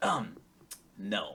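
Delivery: acted, suddenly grave, sober, no-nonsense delivery. Retelling an awkward reply while being dragged along: imitating a serious reply. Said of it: "As he's freaking out, he just gets real serious".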